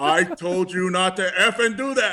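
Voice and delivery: fake angry shouting. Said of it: "And he's screaming".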